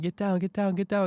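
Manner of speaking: repeated high, urgent screaming. Recapping a Bears win, reliving screaming at his team's player: retelling own scream. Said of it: "I was just screaming".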